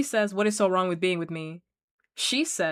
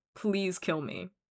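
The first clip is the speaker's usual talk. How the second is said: imploring, begging, pleading tone; 6 dB quieter than usual. Retelling what a woman in bed said, imitating someone begging. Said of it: "She's like begging".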